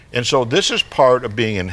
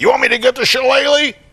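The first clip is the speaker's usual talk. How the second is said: mock very high, shrill, loud yelling; 13 semitones higher, 5 dB louder than usual. Recalling the father's threat from childhood, retelling dad's yell. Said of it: "His real skill in life was yelling".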